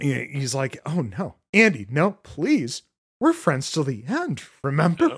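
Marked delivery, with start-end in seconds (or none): 0.9-5.1 sudden, dead-calm, sing-song pleading tone. Recapping a scene where a screaming character suddenly stops, imitating super calm speech. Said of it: "just super calmly".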